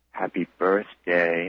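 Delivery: mock-creepy, put-on creepy voice. Speaker quotes a questioning man wishing their mother happy birthday, imitating a creepy tone. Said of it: "in a really creepy tone".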